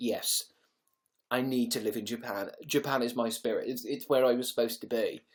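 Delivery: ordinary delivery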